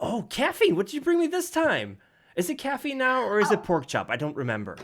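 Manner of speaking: very high, swooping, squeaky critter voice. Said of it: "the voice kind of squeaky".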